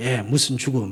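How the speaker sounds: snide, scoffing, sarcastic tone. Imitating how the world might mock the missionaries' death: imitating a sarcastic remark. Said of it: "비꼬면서".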